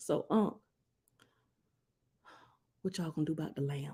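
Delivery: barely audible, hushed half-whisper. Retelling asking an uncle about the lamb: retelling own half-whisper. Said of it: "and I kinda whispered".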